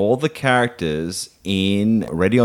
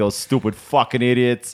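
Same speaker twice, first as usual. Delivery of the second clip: put-on New York accent; 4 semitones higher than usual. Describing what Reese says after a few beers, imitating Reese's New York accent. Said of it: "He even speaks like a New Yorker".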